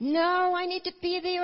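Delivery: put-on sobbing voice. Retelling what their mother said while sobbing, imitating her sobbing. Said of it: "And she was just sobbing".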